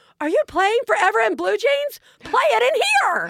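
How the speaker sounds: put-on very high-pitched child's yell, from another room. Retelling a call from the bathroom: imitating Katie Bell yelling. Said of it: "Katie Bell yells out".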